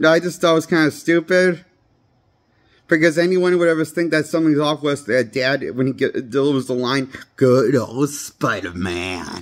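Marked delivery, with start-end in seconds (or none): 7.4-9.4 put-on very low, obviously evil, sinister voice. Quoting a villain's line from a film: imitating a creepy, evil line delivery. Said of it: "sounds obviously evil how he says it".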